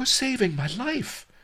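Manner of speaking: very high-pitched, glad exclaiming cry. Narrator reading the miser's line to his benefactors, cried out. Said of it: "cried Miser Shen".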